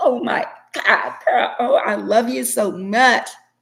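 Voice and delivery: high, very slow, stretched-out, uptight, prissy gushing. Mocking uptight people who act like Miss Perfect: mocking an uptight Miss Perfect. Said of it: "Miss Perfect and wanna be like".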